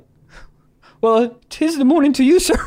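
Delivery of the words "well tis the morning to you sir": flustered, high, laughing fake-polite tone. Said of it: "And then I was like".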